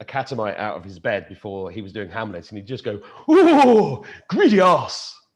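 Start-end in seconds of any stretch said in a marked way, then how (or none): 3.3-5.1 theatrical put-on voice, high, loud, swooping, stretched "oh". Recalling a theatre in-joke impression: John Gielgud impression. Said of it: "We used to do this impression of John Gielgud".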